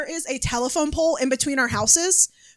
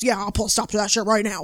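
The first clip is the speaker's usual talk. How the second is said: imitated grandfather voice, lower; 4 semitones lower than usual. Retelling what grandpa said about a neighbor, imitating grandpa. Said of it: "My grandpa goes".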